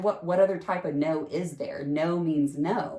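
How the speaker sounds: plain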